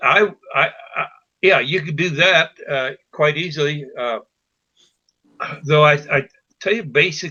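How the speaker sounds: stammering and stuttering, repeating words. Talking through a woodworking build plan, the speaker stutters. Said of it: "I'm stuttering".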